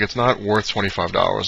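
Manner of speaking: ordinary talk, nothing marked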